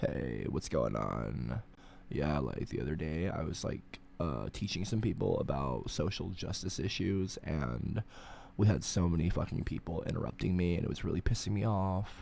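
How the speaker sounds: very low, soft, throaty, creaky vocal fry. Demonstrating what vocal fry sounds like, in vocal fry. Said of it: "Whenever you hear someone do that with their throat".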